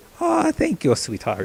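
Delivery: put-on old granny voice, very high. Speaker, no voice actor, tries out a voice: old grandma voice. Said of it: "This is a real grandma voice".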